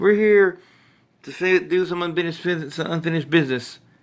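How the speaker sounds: all amped-up, hyped, excited delivery. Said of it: "He's all excited".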